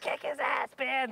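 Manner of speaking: stretched-out, drawn-out high yell. Retelling cheering on Ben again at a hockey game, retelling a scream. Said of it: "And I'm just like".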